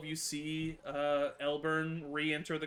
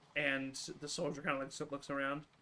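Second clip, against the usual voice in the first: usual speaking voice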